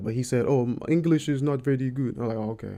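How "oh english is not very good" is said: spot-on, slow put-on Russian accent. Quoting a russian man about his english, in an imitated russian accent. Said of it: "That's a spot on Russian accent".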